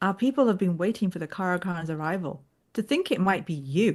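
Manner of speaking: acted, thoroughly unimpressed, underwhelmed sarcastic delivery. Quoting a line from a trailer as Aviendha: sarcastic and underwhelmed. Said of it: "she just sounds really sarcastic and underwhelmed".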